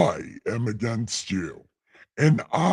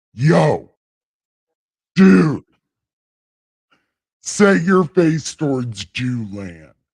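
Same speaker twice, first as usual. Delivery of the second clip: loud, raised voice, booming and proclaiming; 3 semitones higher, 8 dB louder than usual. Reading Ezekiel aloud, delivering the Lord's words in a God voice. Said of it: "let me see if God's voice is working".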